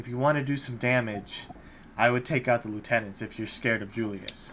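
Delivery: furtive, secretive, hushed, cautious half-whisper. Storyteller voices a woman who looks around cautiously before speaking to the listeners, half-whispering. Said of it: "she kind of looks around cautiously and she whispers".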